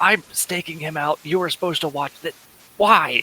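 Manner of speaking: put-on grumpy old man angry whisper. A grumpy old man gestures up the stairs, in an angry whisper. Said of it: "I'm gonna go check on the old grumpy man now. / he gestures up the stairs. / I'm gonna go check on the old grumpy man now. / you're doing the angry whisper thing".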